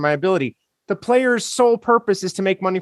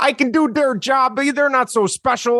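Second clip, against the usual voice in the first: put-on slight Canadian accent, pitched up; 6 semitones higher than usual. Host quoting sports radio callers talking about the players: kind of Canadian-sounding. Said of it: "that sounded kind of Canadian".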